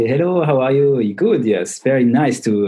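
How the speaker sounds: very thick French accent. Asked to show different accents, the speaker demonstrates a very french accent. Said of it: "un accent très français c'est".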